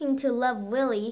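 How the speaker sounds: ordinary delivery, nothing marked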